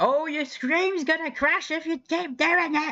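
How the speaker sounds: mock very high, screaming overprotective mother voice. Retelling how OBS warns about the stream crashing: OBS as screaming overprotective mother. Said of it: "Just screaming like".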